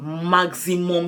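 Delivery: heavy emphasis on the word maximum. Giving a tip about changing your name on documents in Nigeria, stressing maximum. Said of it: "emphasis on the word maximum".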